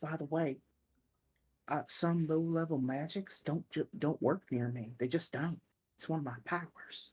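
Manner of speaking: hushed whisper. In a tabletop game, a player's character speaks privately to Cap: whispering. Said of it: "whispers to Cap".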